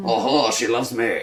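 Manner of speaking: put-on French-accented cartoon skunk voice. Playing a charming French villain for laughs: Pepe Le Pew voice. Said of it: "Pepe Le Pew".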